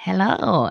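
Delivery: failed attempt at a creepy voice. Trying the Cheshire Cat's creepy voice: failed creepy Cheshire Cat voice. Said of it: "he does have a very creepy voice".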